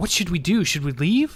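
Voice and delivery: hesitant, unsure stage whisper with questioning tone. Voicing a frightened townswoman asking the adventurers what to do: half-whispering, unsure. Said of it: "she's whispering as if she's not sure".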